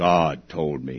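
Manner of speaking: very deep, low, hushed, soft mystical oracle tone. Retelling how a man answered another man's question, in a put-on deep spiritual voice. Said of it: "he replied in his very best deep spiritual voice".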